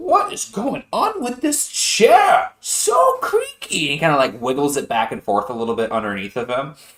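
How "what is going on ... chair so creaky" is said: very high, loud, slow, swooping, animated character voice. Voicing a character complaining about a creaky chair near guards: Wallaby voice. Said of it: "Wallaby goes".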